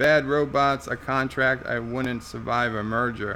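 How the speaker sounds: plain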